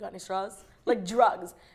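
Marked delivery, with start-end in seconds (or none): 0.0-0.5 secretive, hushed half-whisper. Retelling asking a busboy for straws: imitating own half-whisper. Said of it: "I whispered to him".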